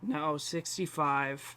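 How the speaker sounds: soft, slow, disappointed voice, deflated and trailing off. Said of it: "he sounds so disappointed".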